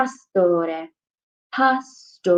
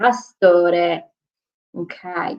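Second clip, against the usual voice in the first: ordinary talk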